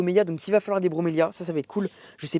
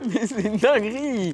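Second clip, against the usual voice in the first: talking through laughter, higher pitch; 4 semitones higher than usual. Laughing uncontrollably while presenting plants: laughing while talking. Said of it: "C'est une dinguerie de rigoler comme ça".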